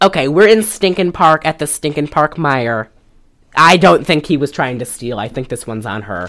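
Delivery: plain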